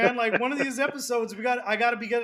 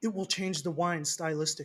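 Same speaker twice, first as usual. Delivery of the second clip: put-on serious voice, lower and quieter; 5 semitones lower, 6 dB quieter than usual. Speaker gets into character to quote Jeremy: serious Jeremy impression. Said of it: "I'm going to say this as Jeremy".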